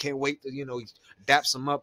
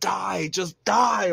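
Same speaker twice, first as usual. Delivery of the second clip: mock raw, raging scream, high and rough; 5 semitones higher, 4 dB louder than usual. Speaker acts out a man screaming at someone he hates, retelling a furious scream. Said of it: "he's screaming".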